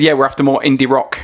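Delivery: ordinary delivery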